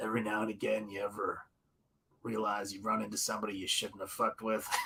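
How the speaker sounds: very deep, bass-heavy western voice, pitched low. Picturing how a line would sound: Clint Eastwood voice. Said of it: "I'm picturing, uh, Clint Eastwood".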